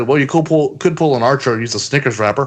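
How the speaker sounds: mock sarcastic, fast wisecracking delivery. Speaker recounting a reply to a man asking about condoms, retelling a sarcastic reply. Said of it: "my sarcastic".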